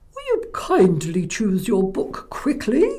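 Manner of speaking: silly put-on librarian voice, very funny, sing-song. A storyteller reads the librarian's line aloud, very funny voice. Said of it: "in a very funny voice".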